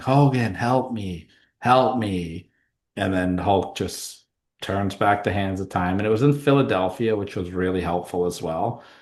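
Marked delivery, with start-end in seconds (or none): 0.0-2.5 put-on, very slow, dragged-out pleading voice. Retelling a wrestling match where Sting is beaten down: imitating Sting yelling for help. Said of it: "he's just yelling".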